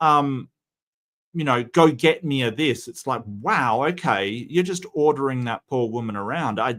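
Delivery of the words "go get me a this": mock-rude demanding tone, slower. Speaker acts out how diners ordered their server around, mimicking a rude order. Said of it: "I was shocked at how rude they were".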